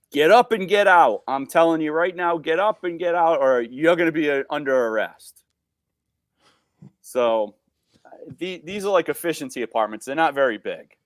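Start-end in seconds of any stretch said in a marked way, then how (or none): 0.1-5.4 mock, very stern, firm commanding voice. Retelling a partner ordering a man off a chair: imitating a very stern voice. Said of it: "Tells him again to get up".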